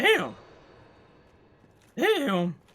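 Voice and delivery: cracking voice. Commenting on a fast run while watching it: voice cracking. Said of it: "my voice is cracking there".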